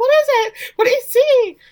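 put-on high, loud, scared little girl voice.

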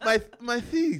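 imitated lisp without teeth. Retelling holding out his teeth to his mom at the door, imitating a toothless lisp. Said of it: "You sound like Mike Tyson?".

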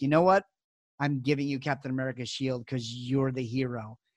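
play-acted, heartfelt voice catching, choked up with emotion. Retelling a video message to a kid: imitating Chris Evans choked up. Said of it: "he's choked up".

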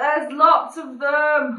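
loud, high shouting. In a tabletop game, several creatures in the room notice the party, shouting. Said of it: "You're shouting".

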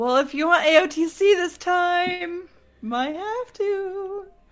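high, openly delighted tone. On a show, telling a co-host what they might have to do, gleeful. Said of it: "a little less glee in your voice".

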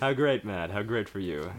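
smug, condescending, patronizing tone. Group showing off different voices on request, doing a condescending voice. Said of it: "Now do your condescending voice".

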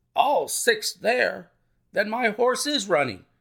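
agitated, alarmed outcry. The colonel cries out in reply to the narrator, in great agitation. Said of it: "cried the colonel in great agitation".

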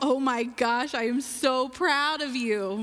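really joyful, proud, drawn-out voice. A mother demonstrates one of her mommy voices, the really joyful one. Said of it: "A really joyful".

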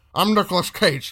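put-on loud, high, very drunk voice, badly done. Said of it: "my impression of a very drunk Nicolas Cage".

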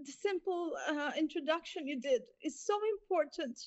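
high, tearful voice breaking into a cry. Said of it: "sorry for crying".

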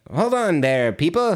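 high little gnome character voice. Retelling a movie where garden gnomes come alive: gnome voice. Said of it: "they all talk like that".

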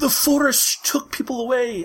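put-on very high, slow, cowering Scottish accent. Describing a scene, quoting a cowering woman found in the woods, in a Scottish accent. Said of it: "I'm doing a Scottish accent for some reason".

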